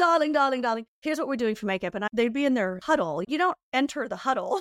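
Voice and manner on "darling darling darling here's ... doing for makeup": fabulous put-on accent and manner of talking. Retelling how Pat announced the makeup plan at shoots: imitating Pat's accent. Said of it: "I can't do Pat's accent. She's too fabulous".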